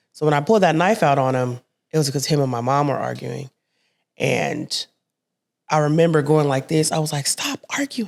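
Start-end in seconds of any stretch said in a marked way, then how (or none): 7.2-8.1 breathy, tearful, hushed crying whisper. Retelling yelling at arguing adults as a child: imitating own past screaming. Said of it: "I'm crying, I'm screaming".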